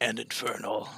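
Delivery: low, hushed, menacing infernal voice, barely audible. Switching your character's language to infernal in the game; infernal voice. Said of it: "That's my Infernal voice".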